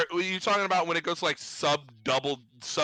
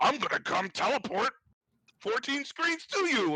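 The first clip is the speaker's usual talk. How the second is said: angry, higher-pitched, menacing voice; 8 semitones higher than usual. Retelling what a burly game enemy said: imitating an angry enemy. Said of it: "he literally got all pissed off and he's like".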